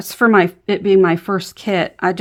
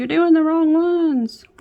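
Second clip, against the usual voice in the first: very high, shrill, play-acted screaming; 10 semitones higher than usual. While diamond painting, voicing what viewers would scream at the mistake: imitating viewers screaming. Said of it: "You guys were probably all screaming at me like".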